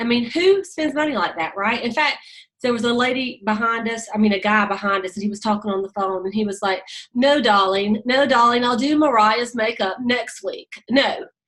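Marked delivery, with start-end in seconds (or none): 7.1-11.2 put-on unhurried British accent. Imitating a guy behind them talking on the phone, british accent. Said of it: "he was talking in that British accent".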